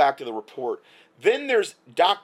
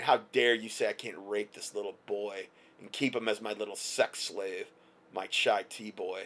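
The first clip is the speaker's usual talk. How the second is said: put-on disdainful contempt, quieter, lower; 6 semitones lower, 9 dB quieter than usual. Reporting on police chiefs, speaker acts out how they respond, mock disdain. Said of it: "with disdain".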